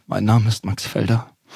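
sad, sorrowful, downcast delivery. Starting a voice exercise with the emotion sad: sad, downcast. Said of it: "Es fängt an mit traurig".

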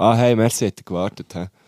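sniffy, superior, haughty, condescending tone. Showing how a merci can sound arrogant, haughty condescending tone. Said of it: "Merci kann ja auch schnell mal so fast ein bisschen überheblich wirken. So".

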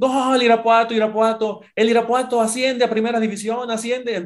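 put-on scream. Retelling how a boy shouts when he scores a goal, acting out a shouted goal call. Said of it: "cuando mete el gol empieza a gritar y dice".

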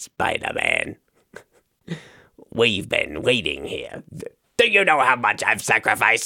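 swooping, sing-song villain voice. Show host doing Green Goblin lines to Spider-Man, Willem Dafoe impression. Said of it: "That's my Willem Dafoe impression".

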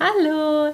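"hallo" trilled high in a sing-song tune. Showing a service greeting to avoid: high sing-song 'hallo'. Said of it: "Ich darf mich nicht reintrellern und machen".

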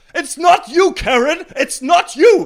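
shrill, booming, drawn-out put-on voice, very high and loud. Showing how John Oliver talks, quoting a line: John Oliver impression. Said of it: "John Oliver geht irgendwie so".

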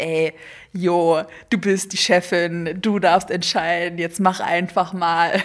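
slow, swaggering, cocky put-on macho tough-guy voice. Describing her inner voices, the speaker lets her macho-guy voice speak up: cocky macho-guy voice. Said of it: "dann kommt meine Mackerstimme und sagt so".

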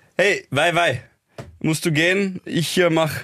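bad fake Egyptian accent. Asked to imitate a foreigner speaking german, the speaker tries a bad fake egyptian accent. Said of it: "als ich jetzt einen Ägypter".

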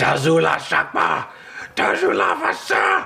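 shrieking, high, rasping monster screech in a strange tongue. Game master voices a small hell knight turning on the players; screeching creature voice. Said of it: "It screeches in an unknown language".

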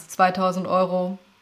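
flat, machine-like, emotionless robotic monotone. Coaching on choosing your tone, showing a robotic delivery that sounds distant. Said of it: "Auch wenn du es quasi roboterartig machst".

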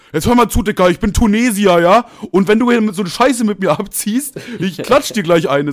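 mock, really enraged, loud, high furious outburst. Retelling a man's reaction at a pedestrian crossing, imitating someone very angry. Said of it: "und dann er so voll sauer".

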